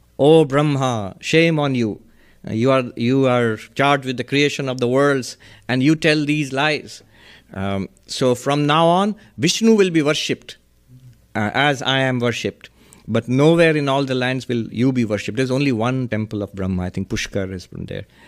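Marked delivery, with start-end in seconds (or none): none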